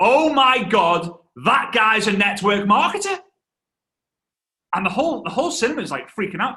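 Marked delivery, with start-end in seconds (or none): 0.0-3.2 loud, shouted outburst. Retelling his dad shouting in a cinema, a shout at the top of his voice. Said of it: "at the top of his voice".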